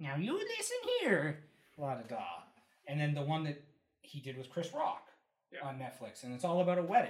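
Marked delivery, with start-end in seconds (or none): 0.0-2.2 awkward put-on voice, pitch swooping around. Describing a movie role, imitating the actor's awkward Adam Sandler voice. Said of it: "doing his awkward Adam Sandler voice".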